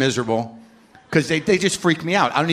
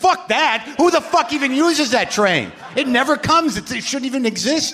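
very high-pitched, furious, angry rant; 10 semitones higher than usual. Retelling being told to take the g train, retelling an angry rant. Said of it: "that's how angry I was".

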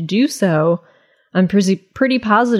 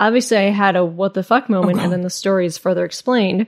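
ordinary talk

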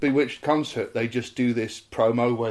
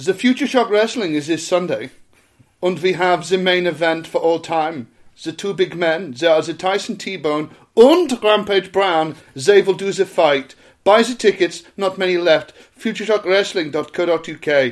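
fake German accent, much higher and louder; 5 semitones higher, 5 dB louder than usual. Reading out a wrestling event ad in a cod German accent. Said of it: "I'll have to put on a cod German accent".

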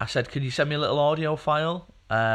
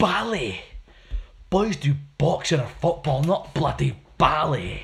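northern English film character voice; 2 semitones higher than usual. Chatting about Billy Elliot, the speaker does a Billy Elliot film impression. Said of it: "That's my Billy Elliot film impression".

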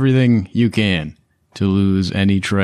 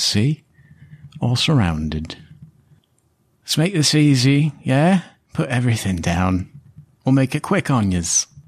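cocky, menacing street thug voice; 4 semitones higher than usual. Voicing a hidden thug who taunts the players: menacing thug voice. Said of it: "this voice from the streets says".

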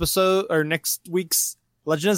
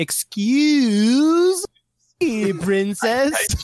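put-on angry teen voice, higher and louder; 8 semitones higher, 4 dB louder than usual. Quoting a cartoon show's catchphrase, imitating Link. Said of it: "compilation of Link going".

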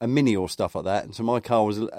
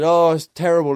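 high, raised, complaining shout; 7 semitones higher, 7 dB louder than usual. Recalling a player at a football match, imitating him shouting. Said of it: "he was shouting".

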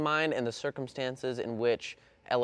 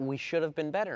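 ordinary delivery

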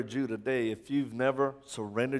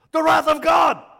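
sudden, shrill, very loud, very high scream; 13 dB louder than usual. Retelling how a quiet brother suddenly screamed out in the room, retelling a scream. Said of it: "he screams out".

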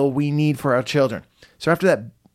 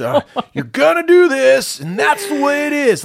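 very high, loud, dumb dad voice; 11 semitones higher, 6 dB louder than usual. Acting out his own rule-setting as a father, in his dumb dad voice. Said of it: "that's my dumb dad voice".

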